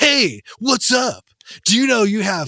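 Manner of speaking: loud, excited, pushy, pumped-up aggressive hype-man voice. Speaker imagines how data reports talk to her: excited, aggressive man voice. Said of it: "this excited, aggressive man voice".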